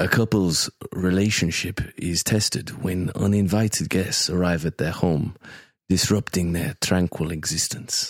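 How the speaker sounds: drawn out, low and soft, with Spanish accent. Reading out a film synopsis as Javier Bardem: Javier Bardem voice. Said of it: "Can I go for Javier?".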